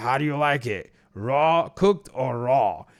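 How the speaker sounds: gruff delivery. Retelling a scene where Kirk greets Jameson at the door with the newspaper: gruff Kirk voice. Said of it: "With that gruff voice of it".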